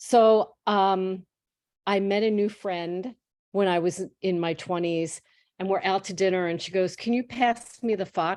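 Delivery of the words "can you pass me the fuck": put-on heavy Boston accent. Retelling what a new friend said at dinner, in a strong Boston accent. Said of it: "so pronounced Boston accent".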